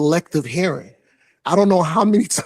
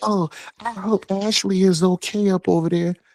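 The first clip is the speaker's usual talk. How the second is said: silly, put-on mocking voice; 3 semitones higher than usual. Reading out a chat comment about a wife: put-on voice. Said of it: "Why you that voice?".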